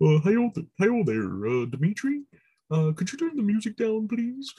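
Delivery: put-on frog puppet voice. Imagining Kermit the Frog making the phone call to Dimitri: Kermit the Frog voice. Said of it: "to hear Kermit the Frog do the phone call".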